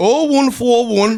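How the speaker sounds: slow, loud Geordie accent. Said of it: "What's the number in a Geordie accent?".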